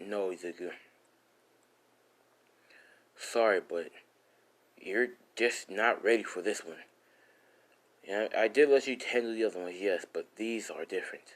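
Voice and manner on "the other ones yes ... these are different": ordinary delivery, nothing marked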